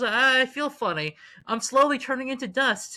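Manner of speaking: slow, weepy, tearful, crumbling voice. Retelling a movie death scene, imitating Spider-Man crying. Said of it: "when Tom Holland Spider-Man dies, he's crying".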